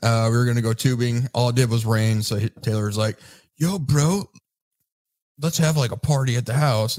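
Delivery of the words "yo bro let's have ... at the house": put-on heavily laid-on stoner bro-dude voice. Retelling a friend's suggestion to throw a party: bro dude voice. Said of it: "Taylor didn't sound like that at all".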